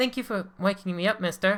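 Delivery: acted mouse voice, high. Narrating a scene, the mouse turns back to the man; Gretel's high-pitched mouse voice. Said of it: "using that high pitched voice".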